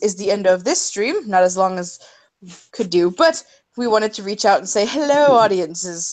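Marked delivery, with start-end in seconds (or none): 4.9-6.1 sliding into British accent. Saying hello to the stream audience: British accent. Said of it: "You slipped into a s-, a British accent there".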